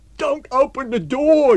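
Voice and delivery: shrill, very loud, very high, drawn-out scream. A man rushes into the bar as the summons outside is repeated; screamed. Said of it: "he screamed".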